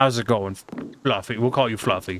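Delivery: condescending, patronizing, talking-down tone. Speaking to an old lady nicknamed fluffy, patronizing tone. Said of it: "With that patronizing tone of voice".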